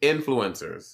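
soft influencers with stress on IN. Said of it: "my accent is on in".

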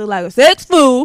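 booming, very loud caricatured put-on voice. Quoting a man's view of Khaled's comments, imitating his voice. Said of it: "Let me say it in his voice".

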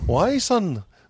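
Irish dad voice. Retelling a story about an Irish father answering his son: imitating an Irish father's voice. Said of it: "She did the voice".

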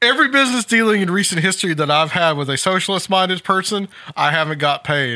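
usual speaking voice

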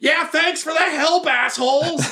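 squeaky, high-pitched goblin voice. Voicing a goblin who thanks the party sarcastically: voicing the goblin. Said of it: "you hear the goblin be like".

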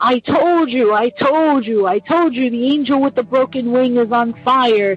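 put-on freaked-out, frantic, panicked cry, words tumbling. Retelling how a little sister screamed on seeing the fire: imitating someone screaming. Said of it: "she's screaming".

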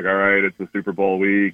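flat, level monotone with no lift. Describing Belichick's superpower, then imitating him in a Belichick monotone voice. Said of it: "with his monotone voice, like".

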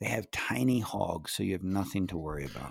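quiet whispering. Sharing a secret that no one should hear: whispering. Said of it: "so I'm gonna whisper it".

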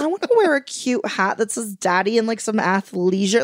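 ordinary talk

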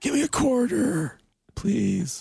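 put-on wheezy emphysemic voice. Retelling a childhood wish to play an arcade game: imitating own old wheezy voice. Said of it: "I talked like an old wheezy emphysemic".

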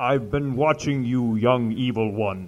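heavy-breathing villain voice. A guest on Kill Tony answers the host, in a Darth Vader voice with heavy breathing. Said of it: "Heavy, very heavy breathing".

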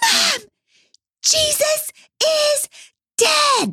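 put-on acted high child's scream. Retelling a small child's cry from upstairs: imitating a child screaming. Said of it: "her little voice is screaming".

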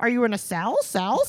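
high, loud, mocking, taunting voice.

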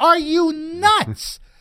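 very high, shrill, loud scream, "nuts" stretched. Retelling watching a game on TV: retelling screaming at the TV. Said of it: "I'm screaming at the T V".

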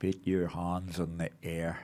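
put-on Irish accent, soft and hushed. Retelling a man behind him at a cash point, in a mock irish accent. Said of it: "a mock Irish accent".

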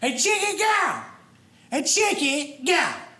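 high, slow, drawn-out raspy smoker's voice cartoon yell. Retelling the lady serving chicken at a barbecue: retelling a Cartman-like yell. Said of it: "kept yelling".

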